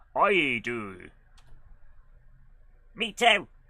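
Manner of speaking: rustic farmer voice. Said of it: "Why have they both got farmer accents now?".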